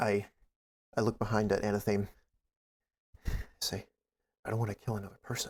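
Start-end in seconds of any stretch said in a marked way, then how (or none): 3.6-5.5 quick, breathy half-whisper, no voice. Looking back at the one following behind, half-whispering. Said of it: "I'm whispering".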